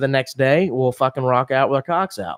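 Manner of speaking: plain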